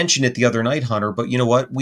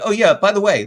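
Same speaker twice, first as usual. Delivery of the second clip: mock casual nonchalant tone, higher; 8 semitones higher than usual. Retelling what a neighbor casually said about a creature: imitating a nonchalant neighbor. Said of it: "very nonchalant".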